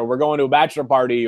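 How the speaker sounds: ordinary talk, nothing marked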